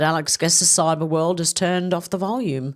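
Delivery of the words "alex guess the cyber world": usual speaking voice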